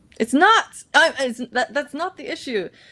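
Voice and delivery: high, yelled, protesting tone. Pushing back when told the power supply is the problem: yelling. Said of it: "Sorry for yelling".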